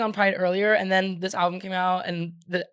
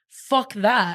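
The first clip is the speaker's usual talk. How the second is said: put-on bad, trashy British accent; 3 dB louder than usual. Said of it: "I keep doing a British accent every".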